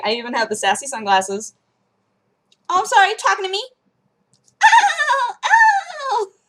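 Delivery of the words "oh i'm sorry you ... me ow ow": very high, swooping cartoon voice with stretched-out ow. Showing a practiced Olive Oyl voice while in costume: Olive Oyl voice. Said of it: "I've been practicing that a lot".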